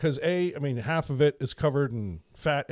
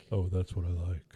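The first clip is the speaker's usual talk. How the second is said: very deep, dropped very low, hushed; 7 semitones lower, 5 dB quieter than usual. Asked to say the line again, repeating it in a real deep voice. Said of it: "Like real deep".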